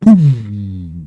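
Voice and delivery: loud, booming mock subwoofer bass sound effect.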